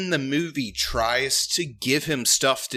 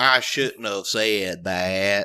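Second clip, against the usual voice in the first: mocking, bad fake Southern accent, lower; 6 semitones lower than usual. Mocking a movie character's line after the other speaker criticizes his accent: imitating a bad southern accent. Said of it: "the accent's just, like, super fake and forced".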